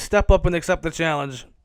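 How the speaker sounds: ordinary talk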